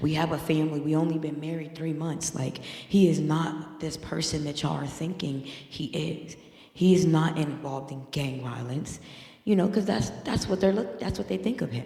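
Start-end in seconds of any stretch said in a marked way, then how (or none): none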